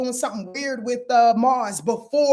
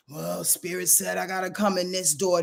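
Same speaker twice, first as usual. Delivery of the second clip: put-on reluctance, lower pitch; 5 semitones lower, 5 dB quieter than usual. A speaker acting out receiving blessings reluctantly, mock-reluctant. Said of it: "broken and battered and bruised and, and, and, and reluctant".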